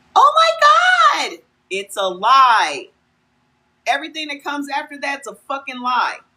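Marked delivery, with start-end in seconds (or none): 0.2-1.4 very high, fake excited gush, "my" drawn out. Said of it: "that voice goes up".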